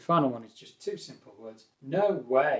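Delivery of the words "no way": a touch more force, still controlled, firm. Showing learners a firmer way to disagree: slightly forceful tone. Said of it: "a little bit more forceful".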